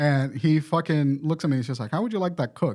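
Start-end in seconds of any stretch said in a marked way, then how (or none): 1.9-2.8 put-on accent from Ethiopia. Retelling a waiter's question at an Ethiopian restaurant: imitating an Ethiopian accent. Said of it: "straight from Ethiopia, got the accent".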